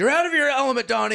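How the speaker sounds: very high-pitched, shrill, loud scream. Quoting a movie scene where one character interrupts another: imitating Walter screaming. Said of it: "screaming at him for interrupting".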